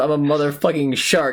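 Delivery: acted high-pitched mild creature-like scream. Retelling a comic scene where King Shark sprints down a hill: imitating King Shark screaming. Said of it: "just screams".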